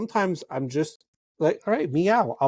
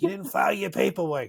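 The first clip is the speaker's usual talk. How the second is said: very raspy, heavy-smoker voice. Imitating a cat's raspy smoker's meow: Roz from Monsters, Inc. voice. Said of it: "It's like Roz from Monsters, Inc".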